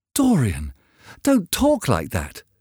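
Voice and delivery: high, swooping, cried-out exclamation. Hallward answers Dorian, crying out. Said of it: "cried Hallward".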